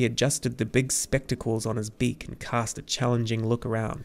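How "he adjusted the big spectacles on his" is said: ordinary delivery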